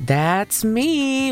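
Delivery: mock very happy tone. Retelling how the store manager answered an old lady, in a mock very happy tone. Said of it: "with a very happy tone".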